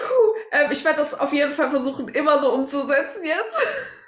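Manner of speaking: fit of laughter, giggling through the words. Answering the other speaker during a fit of laughter: fit of laughter while talking. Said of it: "ich hab grad voll einen Lachflash".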